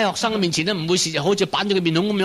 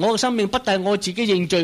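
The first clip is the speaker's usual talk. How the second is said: usual speaking voice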